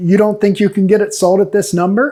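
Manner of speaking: acted-out patronizing, condescending, talking-down tone. Retelling what the seller said about the price: imitating a condescending seller. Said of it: "almost condescendingly".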